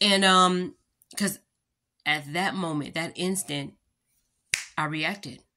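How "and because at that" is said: plain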